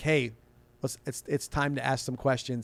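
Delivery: normal talking voice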